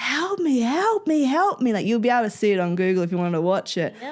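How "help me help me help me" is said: play-acted, desperate, very high-pitched yelling. Retelling being unable to walk on the track and calling to the crowd: retelling yelling for help. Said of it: "I'm just yelling to the crowd".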